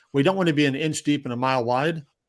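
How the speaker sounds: ordinary talk, nothing marked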